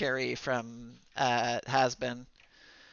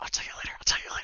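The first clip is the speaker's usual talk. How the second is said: hushed, whispered under the breath. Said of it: "look at everybody like".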